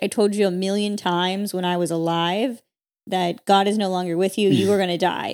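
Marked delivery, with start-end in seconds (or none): none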